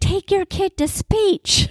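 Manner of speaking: put-on very high, shrieked, nagging tone. Reminding someone how Abby would scream at people, imitating Abby screaming. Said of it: "Remember when she would scream".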